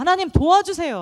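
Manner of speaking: high, loud, desperate cry.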